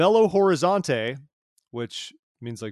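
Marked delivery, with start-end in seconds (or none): 0.0-1.2 loud, pitched-up, heavy American accent on "Belo Horizonte". Pronouncing a brazilian city's name on purpose with very gringo-ish pronunciation. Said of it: "I will pronounce it very gringo-ish".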